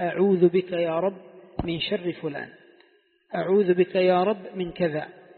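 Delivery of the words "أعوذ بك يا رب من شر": plain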